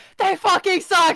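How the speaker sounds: piercing, very high, very loud, shrill scream. Answering a player who asks for screaming at the elephant: screaming at the elephant. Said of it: "You're screaming at the elephant".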